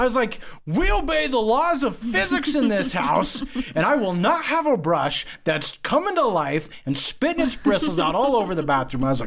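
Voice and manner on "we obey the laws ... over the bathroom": loud, ranting, laying-down-the-law yelling. Retelling a fight with his daughter over a brush, imitating himself yelling. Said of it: "so I start yelling".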